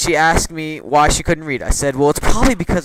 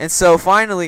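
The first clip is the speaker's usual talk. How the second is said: ordinary delivery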